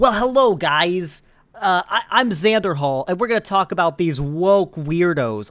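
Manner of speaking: loud, put-on fake New York accent. Imitating how some conservative streamers talk, fake New York accent. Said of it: "I'm going to try to imitate how they talk. ... It's almost like a fake New York accent".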